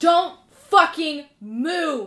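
very loud, very high scream with stretched word. A game master voices Petunia yelling at a player's character: Petunia screaming. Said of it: "you hear Petunia scream".

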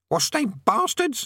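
very high, squawky, croaking parrot voice. A narrator reads a cowering parrot's outburst in a croaking parrot voice. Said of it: "it croaked".

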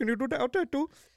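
put-on thick Indian accent. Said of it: "the thickest Indian accent you'll ever hear".

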